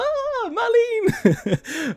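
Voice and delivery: very high, excited, thrilled schoolgirl voice. Explaining a game scene, imitating Barrett as an excited schoolgirl. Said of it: "he's like an excited schoolgirl".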